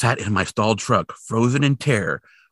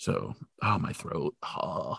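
normal talking voice

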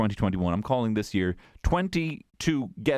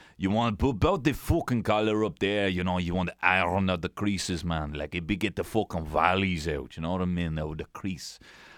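French accent with Dublin tinge; 4 semitones lower than usual. Talking in accents to his boy while teaching him to iron a shirt: Dublin Frenchman accent. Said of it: "doing my Dublin Frenchman".

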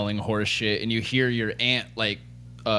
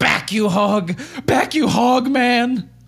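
shrieking scream, very high and very loud; 8 dB louder than usual. Narrating a scene, voicing the aunt swinging a horse's bit: screaming.

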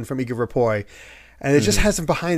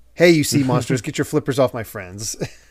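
normal talking voice

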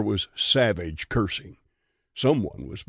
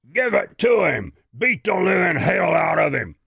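loud, rough, roaring bellow; 8 semitones higher, 5 dB louder than usual. Narrator reads a fight scene, a man urging others to beat someone: bellowing. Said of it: "he heard Bristol bellowing".

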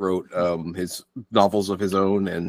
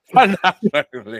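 higher-pitched mock Irish accent. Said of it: "that's the extent of my Irish accent".

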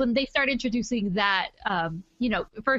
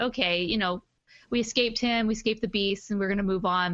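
plain

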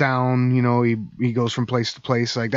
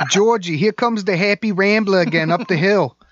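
put-on New Jersey accent, pitched higher; 8 semitones higher, 3 dB louder than usual. Speaker voices a Happy Rambler calling out to Georgie: put-on New Jersey accent. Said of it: "that was my New Jersey accent".

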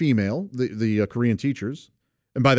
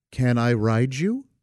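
put-on, mock-kindly tone. Retelling what a woman said to him in the rain, imitating a kind request. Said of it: "very kindly says".

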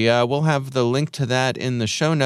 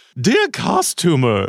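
exaggerated, wacky put-on crazy voice; 4 semitones higher, 3 dB louder than usual. Reading out a strange message, in a put-on crazy voice. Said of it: "I'm going to do a crazy voice here".

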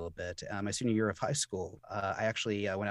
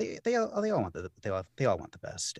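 halting, stuttering, stammering over the same words; 3 semitones higher than usual. Describing parents' wishes to another speaker: stuttering. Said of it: "I'm kinda stuttering right now".

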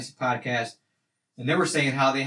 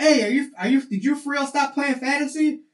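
mock screaming in a very high voice; 12 semitones higher, 4 dB louder than usual. Retelling calling out to someone driving past: retelling a scream. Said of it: "I screamed at him".

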